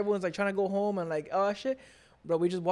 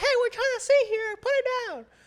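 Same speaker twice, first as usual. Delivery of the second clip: put-on screechy, shrill, high-pitched, angry old woman shouting; 4 dB louder than usual. Retelling the fireworks, the speaker imitates an old lady screaming at a little girl. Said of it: "you're screaming at her".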